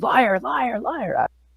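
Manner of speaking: high, drawn-out ghost yell. Telling a story to a group about a ghost yelling accusations at someone, putting on the ghost's yelling. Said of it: "she's like screaming at the ghost".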